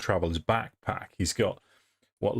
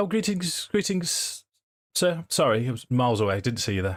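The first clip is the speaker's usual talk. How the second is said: startled, taken-aback, polite, well-spoken, pitched up; 5 semitones higher than usual. Voicing a character surprised by a stranger: taken aback, reasonably well spoken. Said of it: "He'd be taken aback initially".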